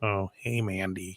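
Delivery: play-acted very quiet, low-spirited, depressed voice. Imitating a wrestler when upset: imitating depressed Otis. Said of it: "depressed Otis".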